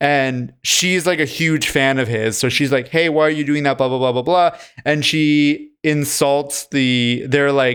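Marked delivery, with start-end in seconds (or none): none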